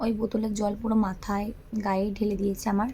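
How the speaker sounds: ordinary delivery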